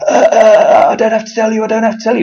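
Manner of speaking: flustered, scared blurt, very high and loud, stammering. Retelling a man's evasive reply on a phone call: imitating a scared man. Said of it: "he went all scared".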